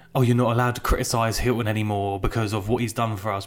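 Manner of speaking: ordinary talk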